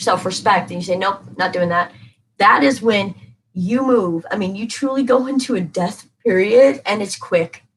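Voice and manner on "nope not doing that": normal talking voice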